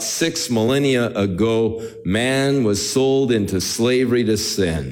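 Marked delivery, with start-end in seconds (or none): none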